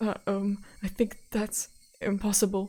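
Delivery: trembling, quivering, raspy, hoarse, stammering, hesitant. Narrator reads a caller's reply on a payphone in a quivering, hoarse voice. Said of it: "His voice was quivering and hoarse".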